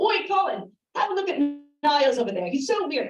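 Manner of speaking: bad put-on English accent. Imagining what people back in England would say, the speaker does a terrible English accent. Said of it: "I'm going to try to do an English accent".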